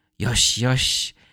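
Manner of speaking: put-on calm, soothing voice. Describing a favorite scene, the speaker quotes Luffy calming a zombie: imitating Luffy's gentle calm. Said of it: "how calm and gentle Luffy is".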